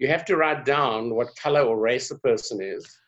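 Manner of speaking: ordinary delivery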